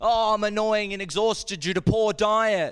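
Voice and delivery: shrill, loud caricature voice pitched very high. Performing a string of announced impressions, now doing a vegan impression. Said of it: "An impression of a vegan".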